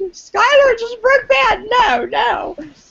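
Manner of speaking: very high, drawn-out, shrieking scream of dismay. Retelling own reaction to a TV episode: imitating own past scream. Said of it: "and I screamed".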